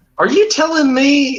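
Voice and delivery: put-on very high-pitched southern US accent. Mid-argument, suddenly slipping into a southern accent. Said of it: "I just started talking in a southern accent".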